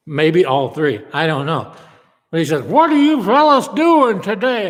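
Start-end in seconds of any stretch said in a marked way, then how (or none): 2.6-4.7 high talk out the side of the mouth. Retelling how a guy greeted him and Randy, talking out of the side of his mouth. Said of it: "Talks out of the side of his mouth like that".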